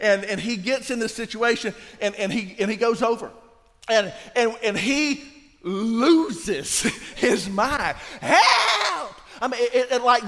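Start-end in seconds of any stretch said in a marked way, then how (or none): 8.2-9.1 high, loud, panicked yell. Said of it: "the voice is several different octaves in one".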